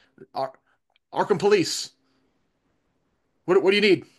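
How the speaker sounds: muffled, distant phone voice. Narrator voicing the Arkham police answering a call, muffled phone voice. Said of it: "You hear a muffled voice on the other end saying".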